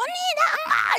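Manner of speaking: very high-pitched, loud shout. Retelling what a fellow inmate yelled back: retelling a shout. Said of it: "이러고 소리 지르는 거예요".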